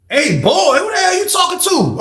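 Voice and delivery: mock yelling, very loud. Retelling a confrontation in the pod: retelling own loud shout. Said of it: "I'm loud as hell in the pod".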